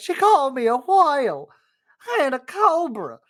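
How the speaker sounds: put-on Southern accent. Retelling how they showed the director the audition line: southern accent. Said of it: "Say this line in a Southern accent".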